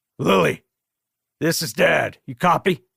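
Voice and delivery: rough, gruff, slow, unhurried smoker's voice. Reading a story aloud, the narrator voices a father calling his daughter over the radio in a gruff smoker's voice. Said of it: "gruff smoker's voice".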